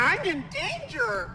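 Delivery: put-on high cartoon kid voice. Exploring a sewer level full of monsters, the player does a Ralph Wiggum voice, almost demonic. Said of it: "[RALPH WIGGUM, almost demonic]".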